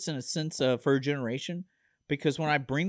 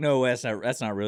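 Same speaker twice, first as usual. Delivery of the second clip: normal talking voice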